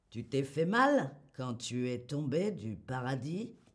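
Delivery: tacky, cheesy, boorish flirting tone. Listing cheesy French pickup lines, in a put-on cheesy beauf tone. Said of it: "Toujours à dire avec ce ton de voix. ... Le beau ton de beauf".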